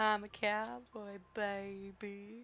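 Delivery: very slow, teasing, mocking drawl. Imitating the other speaker's old stream line: mocking imitation of the listener. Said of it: "That's exactly what you sound like".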